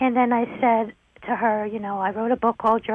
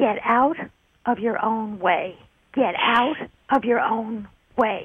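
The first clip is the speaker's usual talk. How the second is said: acted-out, emphatic, firm, insistent, commanding, said twice. Retelling words a voice spoke while walking back to the hotel, retelling a loud command. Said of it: "And he said loudly".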